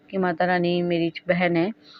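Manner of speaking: usual speaking voice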